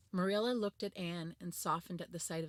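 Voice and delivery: ordinary delivery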